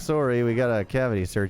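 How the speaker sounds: mock apologetic politeness. Retelling the parents' trip story, imitating overly polite parents. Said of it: "really polite about it the whole time".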